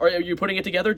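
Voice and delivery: talking extremely fast, rattled off. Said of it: "I don't know why I'm talking so damn fast".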